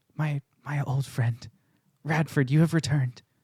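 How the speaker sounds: soft, quiet, gentle hushed library voice. Storyteller voices Azamar walking in, arms full of books, greeting an old friend, in a gentle, hushed voice. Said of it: "he has this gentle, hushed voice".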